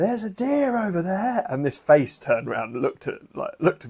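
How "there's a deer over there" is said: very high-pitched, loud shout. Telling how they mistook a woman on a hiking trail for a deer, retelling a loud shout. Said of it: "So I loudly go".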